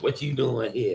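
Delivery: mock nasty sassy attitude. Imitating the sassy little girl with a nasty attitude: imitating a sassy girl with nasty attitude. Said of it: "that little sassy little girl that everybody sees that has the nasty attitude".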